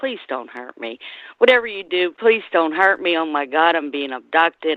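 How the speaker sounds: put-on hysterical, pleading crying. Speaker retelling a dream of alien abduction, imitating her own crying. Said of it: "I'm crying".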